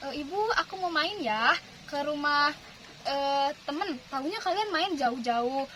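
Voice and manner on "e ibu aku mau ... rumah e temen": plain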